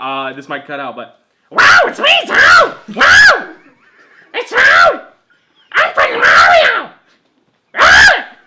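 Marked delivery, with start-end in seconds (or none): 1.5-8.2 very high-pitched, loud screaming voice. Showing the others a Toad impression: screaming Toad voice. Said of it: "I can do a good Toad".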